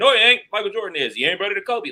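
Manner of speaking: very high, loud, heated argumentative delivery.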